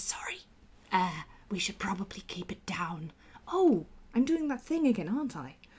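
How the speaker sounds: faint, very quiet whisper. Voicing Alibi saying sorry to Jack after a shush: whispering very quietly. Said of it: "Alibi whispering very, very quietly".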